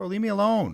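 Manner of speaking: frazzled, high, stressed-out, end-of-the-rope tone. Escaping a cave of attacking monkeys in a game: stressed out. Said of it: "I'm stressed out".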